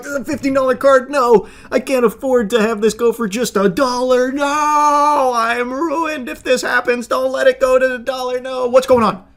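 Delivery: high, frantic, panicky pleading, long "no". Retelling how the seller acted about his card: mocking imitation of the seller. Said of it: "So he was trying to be like".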